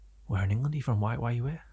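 baffled, mystified, curious, wondering tone. Retelling a shop assistant questioning a customer: imitating a mystified shop assistant. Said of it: "just mystified as to who".

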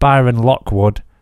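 plain

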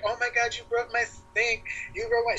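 mock frantic, high-pitched, freaked-out panic. Retelling what she said while the speaker was being sick, imitating her freaking out. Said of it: "She's freaking out".

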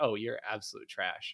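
play-acted lighthearted, playful, joking teasing. Recalling a kid joking about their Iron rank, retelling a joking insult.

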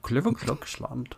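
fake Dutch accent. Trying out a Dutch accent for a joke name, bad Dutch accent. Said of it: "Let's try and do a Dutch accent".

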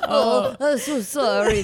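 loud cartoon-chef style French accent. Speakers recounting a film character's apology: Ratatouille-style French accent. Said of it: "This sounds just like him".

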